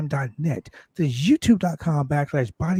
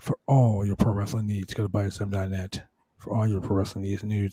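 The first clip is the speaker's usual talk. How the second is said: low, smooth jazz radio announcer voice; 6 semitones lower than usual. Addressing listeners with a plug for the website: smooth jazz voice. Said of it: "give you the smooth jazz voice".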